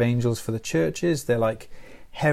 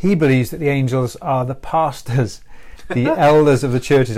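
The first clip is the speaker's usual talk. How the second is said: raised voice, holding back laughter; 6 dB louder than usual. Lecturing on a commentary's view of the angels, holding back a laugh. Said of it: "I tried to say that without laughing".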